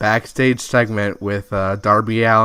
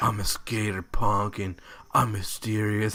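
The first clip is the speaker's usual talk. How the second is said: flat, bored monotone with no pitch lift; 9 dB quieter than usual. Mocking a wrestler's promo segment: monotone Darby Allin impression. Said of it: "He was so monotone and just kinda like".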